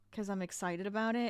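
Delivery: ordinary talk, nothing marked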